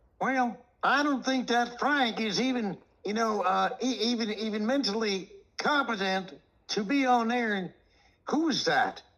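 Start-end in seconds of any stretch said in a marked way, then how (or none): 0.2-7.5 high-pitched, whingeing, put-upon whiny voice. Imitating a guy who called someone unfit for air: whiny voice imitating Baggio. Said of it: "didn't he have that whiny voice like".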